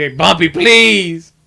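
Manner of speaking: high, tearful voice, crying through sobs. Retelling a movie scene where Valley begs during an interrogation: imitating Valley crying. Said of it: "he's just crying".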